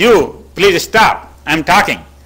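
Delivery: strong, clear, loud, slow, drawn-out voice. Teaching a jam signal, showing what the other guy says back, loud voice. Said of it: "this loud voice".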